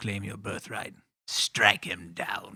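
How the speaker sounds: evil emperor character voice. Quoting Palpatine telling her to strike him down: Palpatine impression. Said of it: "I could have done better".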